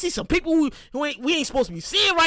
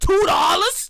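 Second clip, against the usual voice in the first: put-on, high-pitched New York accent; 5 semitones higher, 3 dB louder than usual. Reminiscing about old sandwich prices, repeating a phrase in a New York accent. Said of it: "in my New York voice".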